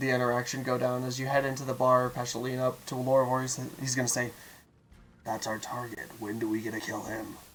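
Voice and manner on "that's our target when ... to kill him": low, hushed half-whisper under the breath. Voicing a character leaning to another at a bar: low half-whisper. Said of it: "In a low whisper".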